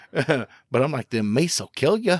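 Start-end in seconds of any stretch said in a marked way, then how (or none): 1.2-2.2 put-on Fargo-style accent. Retelling a reply after being told they look like they're from Fargo: attempted Fargo accent. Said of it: "I can't do the accent now".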